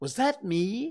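awed, high-pitched, hardly-believing tone. Narrator reading a storybook line as Christopher Robin, in an awed voice. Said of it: "said Christopher Robin in an awed voice".

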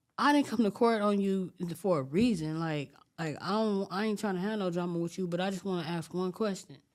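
usual speaking voice

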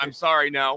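ordinary talk

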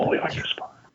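speaking in a whisper. Speaking up briefly during a group discussion: whispering. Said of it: "he's whispering".

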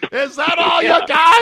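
pretend screaming. Playing out a comparison to a man on a boat: pretend screaming. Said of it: "I'm screaming".

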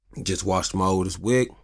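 ordinary talk

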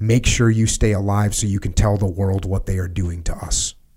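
usual speaking voice

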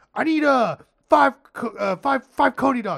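halting, high yell. Retelling ordering from an aggressive counter worker: imitating own yelling back. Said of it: "you just find yourself yelling back at him".

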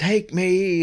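high-pitched scream. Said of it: "He starts screaming".

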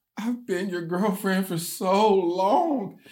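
mock exasperated. Retelling a guest's comment from her video, imitating an exasperated complaint. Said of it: "so exasperated".

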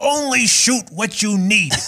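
little scratchy rasp. Retelling a man's answer when asked for advice for a director, in his little raspy voice. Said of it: "in his little raspy voice".

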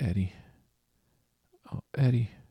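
soft calling out. Retelling a game scene at a window, the speaker reenacts very quietly calling out to him. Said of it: "start very quietly saying".

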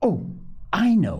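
high, delighted crying out. Told they should keep thinking, the other one answers: crying out in delight. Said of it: "cried Polly in delight".

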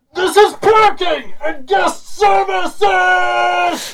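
mock very high, very slow, drawn-out scream. Describing a ride's announcer calling out stops: imitating someone yelling. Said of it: "Who is screaming?".

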